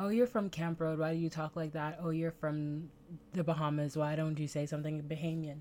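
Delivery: ordinary delivery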